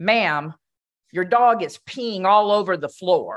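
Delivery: acted, rather harsh tone. Telling a story, quoting a young cashier to an elderly woman, imitating a harsh voice. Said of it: "in a rather harsh voice".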